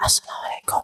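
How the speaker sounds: hushed, breathy whisper. Explaining how not to give the salam, said in a whisper. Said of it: "Jangan seperti apa? Sedang berbisik-bisik".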